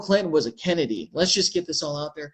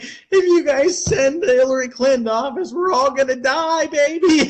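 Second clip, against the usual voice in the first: very high, loud, crying, wailing, begging tone; 9 semitones higher, 5 dB louder than usual. Recalling a political video they once made, imitating their own past crying. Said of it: "I was crying".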